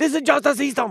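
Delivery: clumsy, bad, fake Chinese accent. Speaker quoting a line from a justice system file: bad chinese accent. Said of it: "That's supposed to be with a Chinese accent".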